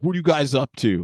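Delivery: very threatening tone. Retelling what a guy said on seeing them, mock-threatening. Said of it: "Just like super threatening".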